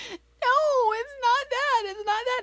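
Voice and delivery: mock very high-pitched, tearful crying child voice. Retelling a daughter's words as she explained why she was upset: imitating a crying child. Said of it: "she's just crying, crying, crying".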